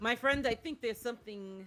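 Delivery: ordinary talk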